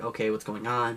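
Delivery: ordinary talk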